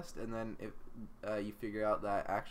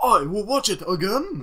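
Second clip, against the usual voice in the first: put-on very high, very loud, shrill old-man Japanese accent; 10 semitones higher, 16 dB louder than usual. Friends trying out accents on one line, now: old japanese man voice. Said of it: "Old Japanese dude".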